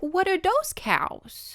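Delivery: put-on very high little baby voice. Retelling a movie scene where a baby notices Santa's reindeer, Annabelle's little baby voice. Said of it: "she has her little baby voice".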